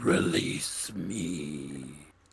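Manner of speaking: disembodied voice from another room, "me" drawn out. Narrating a scene where a voice comes from a closed room: voice from an unseen room. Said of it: "they hear a voice coming from, emanating from Gray's room".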